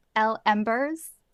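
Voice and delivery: put-on American accent. Asked to say her handle in the american accent, the speaker uses an american accent. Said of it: "can you do it in the American accent?".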